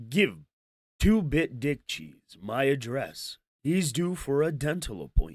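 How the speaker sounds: put-on broadcast announcer voice. Reading out a tough guy's message aloud, in an announcer voice. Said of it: "We'll read it in an announcer voice".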